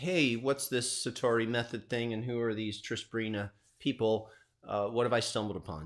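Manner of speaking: ordinary talk, nothing marked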